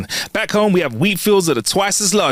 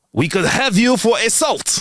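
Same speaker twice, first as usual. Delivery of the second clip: awful fake French accent, pitched higher; 7 semitones higher than usual. Delivering a joke's punchline, put-on french accent. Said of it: "That was my French accent".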